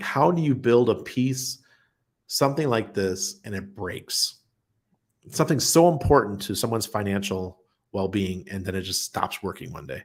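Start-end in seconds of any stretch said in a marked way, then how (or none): none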